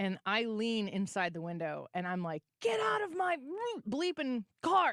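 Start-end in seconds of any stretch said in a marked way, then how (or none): 2.6-4.9 very high-pitched scream, as loud as possible. Retelling yelling at a man who got into your car: retelling a scream. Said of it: "And I am screaming as loud as I can".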